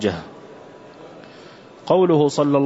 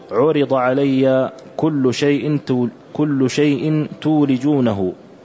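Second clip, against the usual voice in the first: ordinary talk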